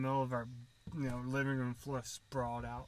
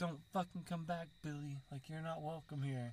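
soft, playful, joking teasing tone; 3 semitones higher, 5 dB quieter than usual. Retelling what the speaker would say as Billy left on Sundays, retelling a joking jab. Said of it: "I would always jokingly be like".

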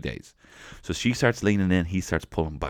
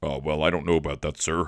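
fake exaggerated voice, deeper pitch; 4 semitones lower than usual.

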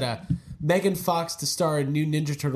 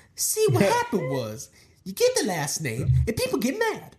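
put-on voice, high-pitched and swooping; 7 semitones higher than usual. Talking about not giving out last names, doing a Ron Daniels impression. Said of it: "That's my Ron Daniels impression".

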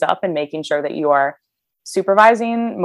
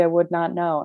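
put-on sad voice, much quieter; 6 dB quieter than usual. Speaker retells a friend's reply to a question, imitating Corey, sadly.

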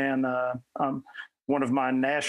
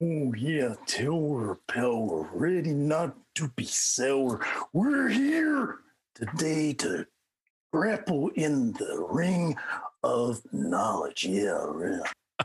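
bad pro-wrestler promo voice with swooping pitch. Giving a wrestling promo introduction when asked: worst Macho Man impression. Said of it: "the world's worst Macho Man impression".

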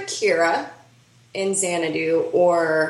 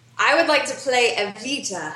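ordinary talk

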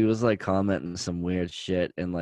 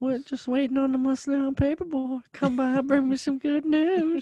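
put-on creepy old man voice, much higher pitch. Imitating the old creepy man from Family Guy, in a creepy old man voice. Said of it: "the old creepy man".

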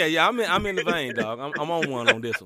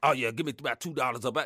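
clogged-up, croaky gremlin voice; 4 semitones lower, 6 dB quieter than usual. Retelling grandmama talking between coughs: imitating a gremlin-sounding voice. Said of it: "she sounding like a gremlin right now".

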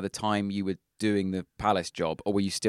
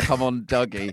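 ordinary talk, nothing marked

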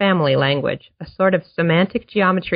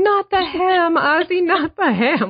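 put-on woman's yelling voice, higher pitched; 11 semitones higher than usual. Retelling a reality TV scene where Sharon Osbourne yells: imitating Sharon Osbourne yelling. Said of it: "Sharon was yelling".

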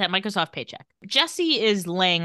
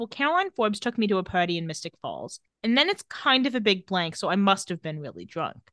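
ordinary talk, nothing marked

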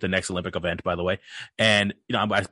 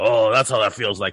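put-on voice of an old lifelong heavy smoker; 3 dB louder than usual. Mocking a character who keeps using his voice when alone, imitating a 60-year smoker voice. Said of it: "little punk with a 60-year smoker voice".

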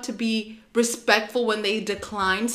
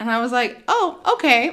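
ordinary talk, nothing marked

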